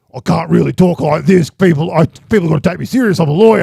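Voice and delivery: put-on rough, creaky voice. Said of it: "he puts on, like, his Roy Kent voice".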